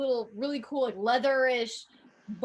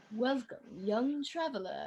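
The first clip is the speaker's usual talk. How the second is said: put-on wise, ancient old sage voice; 8 dB quieter than usual. Describing a short film's voiceover line: ancient sage voice. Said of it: "ancient sage voice".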